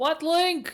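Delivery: with desperation. Repeating the question on another take, more desperate. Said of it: "Now with more desperation in the voice".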